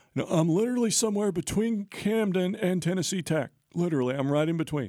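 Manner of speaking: squeaky, very high-pitched caricature voice. Retelling a coach's answer on a phone call: Jeff Herron impression. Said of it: "That was a great impression".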